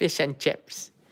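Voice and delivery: New Zealand accent. Joking after talk of accents, the speaker says a stock phrase in a kiwi accent. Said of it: "never mind my Kiwi accent".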